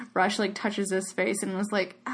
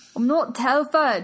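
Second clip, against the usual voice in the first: really awful, bad put-on Scottish accent; 4 semitones higher than usual. Discussing whether a character fakes an accent, doing a really awful Scottish accent. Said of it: "That's me doing a really awful Scottish accent".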